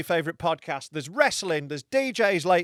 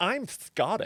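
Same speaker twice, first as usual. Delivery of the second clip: put-on American accent; 3 semitones higher, 4 dB quieter than usual. Half-Scottish speaker imagining an American claiming to be Scottish: American accent. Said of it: "I feel like an American going".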